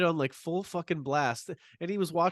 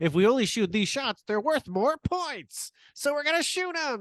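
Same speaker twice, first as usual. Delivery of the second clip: put-on old-fashioned twenties manner, high-pitched old-timey voice; 8 semitones higher than usual. Calling someone a genius, then acting him out in an old-timey 1920s guy voice. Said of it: "I was going for like an old timey thing".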